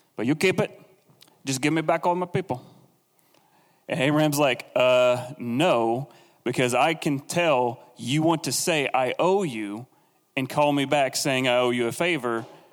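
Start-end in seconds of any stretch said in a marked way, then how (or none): 0.2-2.7 terrible put-on Italian accent, rattled off fast. Quoting a man in a story he is retelling, in a terrible Italian accent. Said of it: "my Italian accent is terrible".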